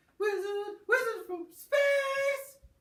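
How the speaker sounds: very loud, very high shriek, "space" drawn out. Teasing another player about a wizard from space: ear-splitting shout. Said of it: "stop hurting my eardrums".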